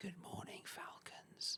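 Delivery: hushed whisper, voice kept way down. Retelling how the teacher greeted the kids early in the morning: imitating a whisper.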